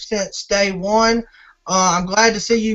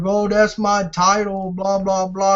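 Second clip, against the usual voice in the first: put-on crying whine, whiny and slower. Warning that a rival will come out on the next show complaining: mock-whining as Mike Houston. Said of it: "he's going to come out crying and whining like".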